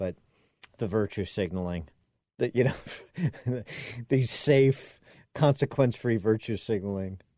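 speaking through laughter. Commenting on a news report, speaker apologizes and keeps laughing while talking. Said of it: "I'm sorry I'm laughing".

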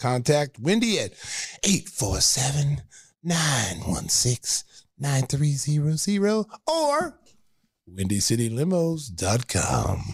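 seductive, sexy, sultry announcer voice. Reading a limo company ad, in a sexy voice. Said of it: "That's a sexy voice".

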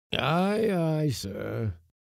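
sleepy. A voice from the forescuttle answers the mate's yell for the cook, sleepily. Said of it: "answered a voice sleepily".

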